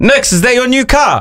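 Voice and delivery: very high, yelled voice. Retelling what a radio listener called out his ute window: retelling a yell. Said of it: "he yells out his window".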